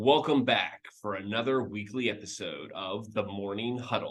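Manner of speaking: dramatic, theatrical announcer voice. Opening a weekly episode of The Morning Huddle, in a dramatic voice. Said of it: "Dramatic voice".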